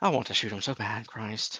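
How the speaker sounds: low muttered aside under the breath. Voicing Allard as the reporter leaves: muttering under his breath. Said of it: "Allard under his breath".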